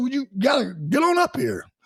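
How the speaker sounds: put-on coaxing yell.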